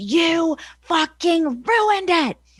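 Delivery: angry scream. Retelling what was screamed into the headset: imitating Vince McMahon screaming. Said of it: "Screaming at me".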